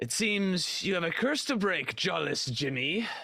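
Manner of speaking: swashbuckling pirate talk. Playing a character who addresses another character, the speaker uses a pirate impression. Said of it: "I'm doing a really good uh, pirate impression".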